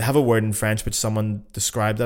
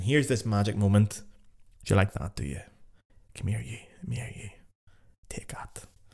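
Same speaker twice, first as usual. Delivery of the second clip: put-on whisper, quieter; 5 dB quieter than usual. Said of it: "she's whispering it, saying".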